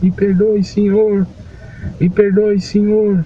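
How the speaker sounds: desperate, high-pitched shouting.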